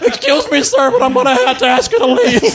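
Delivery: put-on pubescent teenage boy voice. Mocking a race announcer's voice as a boy in puberty: mock voice of a teen in puberty. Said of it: "Sounds like that guy from The Simpsons".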